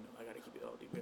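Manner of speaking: hushed, soft, whispered aside to self.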